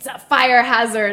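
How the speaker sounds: put-on loud, unhinged, furious old-lady voice. Retelling what an angry older woman told her, mimicking a crazy angry voice. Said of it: "crazy, like, angry voice".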